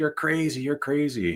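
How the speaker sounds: put-on high, furious, angry screaming. Retelling how an older man ran up screaming at them, imitating his screaming. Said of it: "He's screaming".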